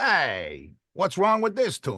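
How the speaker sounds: high, swooping beatnik New York cabbie, drawn-out "hey". Recalling an old StarKist commercial, the speaker does Charlie the Tuna, beatnik cab-driver voice. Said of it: "beatnik um, New York cab driver kind of a sound".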